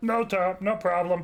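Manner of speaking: very high-pitched, slow-witted, dim voice. Voicing Gary, not the brightest in the shop, greeting a player: dim-witted Gary voice. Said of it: "Gary is not the brightest in the shop".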